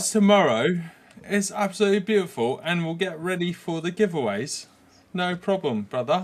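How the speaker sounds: put-on British accent. Signing off to the guys until tomorrow, in a best-attempt British accent. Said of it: "my best uh, British accent".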